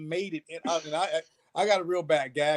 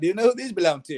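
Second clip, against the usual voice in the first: quick, slightly wonky put-on Australian accent; 3 semitones higher, 3 dB louder than usual. Retelling what a man holding his stick asked, in an Australian accent. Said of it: "He's Australian".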